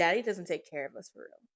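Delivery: ordinary talk, nothing marked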